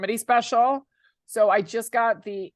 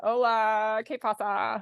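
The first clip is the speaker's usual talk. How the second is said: heavy put-on American accent on Spanish. Retelling answering guys at a bar, thick American accent in Spanish. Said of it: "I would give myself an even thicker American accent".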